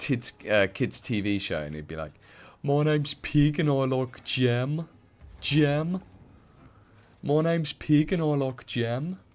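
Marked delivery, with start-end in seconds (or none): 2.6-9.2 put-on slow Brummie accent, pitched up. Retelling a line the stepdad always said from a kids TV show, Brummie accent. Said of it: "in a Brummie accent was".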